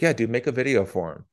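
ordinary delivery

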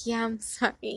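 plain

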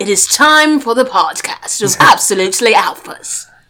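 mock, put-on British accent. A podcast host opening the show, in a put-on british accent. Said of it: "That was a pretty good accent".

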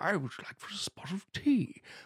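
soft, theatrical, thespian stage actor voice. Talking about how Shakespearean actors speak, doing a McKellen impression. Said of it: "he might talk like that normally, but he's like".

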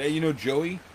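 ordinary delivery

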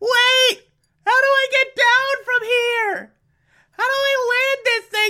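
very high panicked cry from a distance. Recapping an episode scene where Katara yells from a distance: imitating Katara yelling. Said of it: "you hear Katara in the distance yelling like".

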